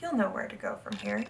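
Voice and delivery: ordinary talk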